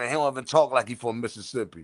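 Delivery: ordinary delivery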